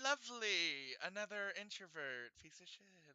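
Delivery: soft, under-the-breath mutter. Voicing a character judging a newcomer: muttered under breath.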